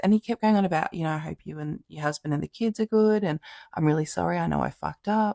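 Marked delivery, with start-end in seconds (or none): 1.1-5.3 put-on voice sounding almost drunk. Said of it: "this person sounded really, like, almost drunk".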